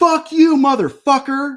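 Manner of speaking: full-throated scream, loud, shrill and high. Retelling what a man yelled in Town Square, retelling a top-of-lungs shout. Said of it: "literally at the top of his lungs".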